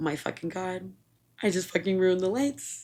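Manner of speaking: acted words broken up by sobs, crying them out. Retelling breaking the van's brake lights at eighteen, retelling own sobbing. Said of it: "and I just like start sobbing".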